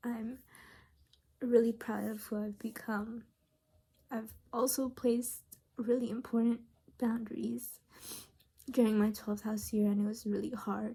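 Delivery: tearful, happy crying while speaking. Talking about who they have become, crying happy tears. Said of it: "I'm crying because I'm really happy".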